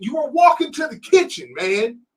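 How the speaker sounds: shrill, very high, loud scolding scream. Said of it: "I'm just screaming at my son".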